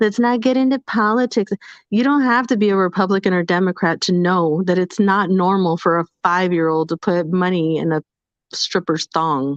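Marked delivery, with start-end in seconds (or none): 0.0-1.5 pitched-up, mocking put-on voice. Speaker mocks listeners who object to politics, in a mocking imitation voice. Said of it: "and in that voice".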